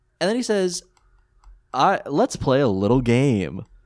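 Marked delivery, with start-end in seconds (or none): 1.7-3.6 put-on suggestive tone, louder. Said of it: "he says it in a tone".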